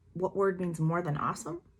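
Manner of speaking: ordinary delivery, nothing marked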